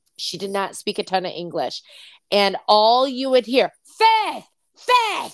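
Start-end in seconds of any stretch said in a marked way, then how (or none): 3.9-5.4 very high mock scream, heavy Italian accent. Retelling how a woman at the salon would scream the speaker's name, heavy Italian accent. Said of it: "she had a heavy Italian accent".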